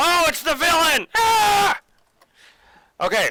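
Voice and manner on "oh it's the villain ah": shrill, very high, very slow, loud drawn-out cry. Finding out that it's the villain in the game: loud exclamation. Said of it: "sorry, that was really loud".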